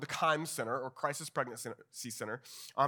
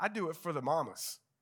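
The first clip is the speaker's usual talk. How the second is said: put-on Southern accent. Quoting a woman from the speaker's story, imitating a southern accent. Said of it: "She was got a Southern accent".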